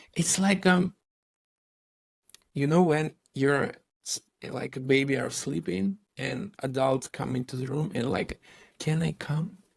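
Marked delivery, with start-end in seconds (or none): 8.8-9.5 soft near whisper, higher pitch. Imitating an adult entering a sleeping baby's room: imitating a near whisper. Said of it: "almost with whisper to you, like this".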